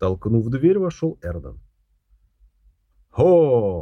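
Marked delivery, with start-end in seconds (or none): 3.1-3.8 exclaimed, louder. A man pushes the door open and walks in; exclaimed. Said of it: "воскликнул он".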